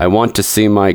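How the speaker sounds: plain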